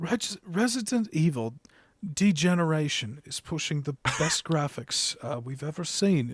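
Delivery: put-on English accent. Reading a Japanese article's graphics claim as Richard Leadbetter: English accent as Richard Leadbetter. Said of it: "I don't know why I'm changing the".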